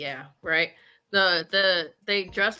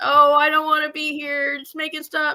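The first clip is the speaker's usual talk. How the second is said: high, loud scream; 8 semitones higher, 5 dB louder than usual. Retelling a daughter on a haunted hayride: imitating daughter screaming. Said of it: "she's screaming and".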